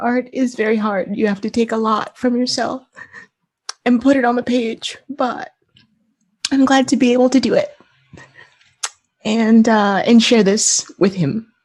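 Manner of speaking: crying through words, voice breaking. Speaking about how much making and sharing the art means: crying, voice breaking. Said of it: "I don't I know why I'm crying".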